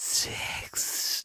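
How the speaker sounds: sultry, breathy, husky, over-emphasised sex. Imitating a movie character saying the word sexily: imitating a sexy husky emphasised "sex". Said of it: "he's tried to say it in the sexiest, huskiest sort of emphasising it way possible".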